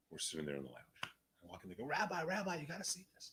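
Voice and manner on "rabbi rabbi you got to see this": very high, thrilled, excited crowd-like screaming. Retelling the guys in a cigar lounge calling the rabbi over: imitating excited screaming. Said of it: "these guys are screaming like it's a football game".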